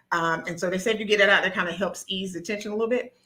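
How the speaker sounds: rushed, excited delivery. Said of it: "I'm excited I'm talking so fast".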